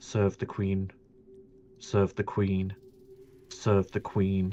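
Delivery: faint, very quiet half-whisper repeating on a loop. Game master voicing the small voice in the listeners' minds: very quiet half-whisper. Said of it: "just very quietly whispering".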